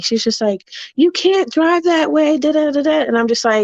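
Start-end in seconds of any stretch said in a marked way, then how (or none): 0.9-3.0 woman screaming, high-pitched, ranting. Retelling what a lady from a hotel screamed: imitating a lady screaming. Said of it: "started screaming at me".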